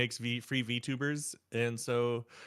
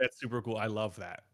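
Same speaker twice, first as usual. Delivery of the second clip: put-on sarcastic, mock-praising tone. Retelling own past reaction: imitating own sarcastic remark. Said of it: "I was being very sarcastic".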